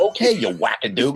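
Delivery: mock voiceover announcer voice. Retelling a phone call, imitating a voiceover guy's voice. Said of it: "but that's his voice".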